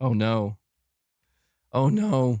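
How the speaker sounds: alarmed, panicked voice cracking and breaking. Reacting to a chatter attacking Xbox, voice cracking. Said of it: "My voice is cracking".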